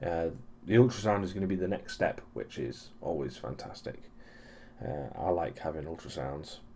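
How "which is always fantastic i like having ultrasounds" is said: low, soft sarcastic tone. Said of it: "I'm being sarcastic".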